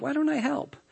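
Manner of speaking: very quiet, very high-pitched offhand casual murmur. She walks in and offers to help, retelling a quiet, casual offer. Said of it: "very casually, very quietly".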